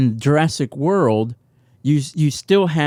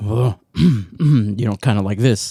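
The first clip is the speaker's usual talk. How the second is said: slow, unhurried musing, easing through fillers; 5 semitones lower than usual. Pretending to be the actor, showing how he talks: Jeff Goldblum impression. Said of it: "I talk a little bit more like".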